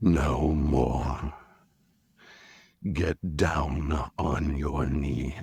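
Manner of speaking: breathy, soft, authoritative tone. Showing how a Bene Gesserit command is read: soft breathy command voice. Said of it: "I would lean close to the microphone and I would say".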